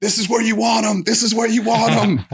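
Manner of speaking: very high-pitched, yelling coach voice. Recalling a match, speaker repeats what the coach was shouting; retelling the coach's yelling. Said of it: "he's like yelling".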